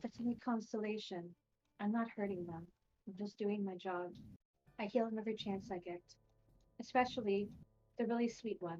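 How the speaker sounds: very quiet, soft, hushed half-whisper. Voicing a character who replies to the listener, half-whispering. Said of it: "she whispers to you in reply".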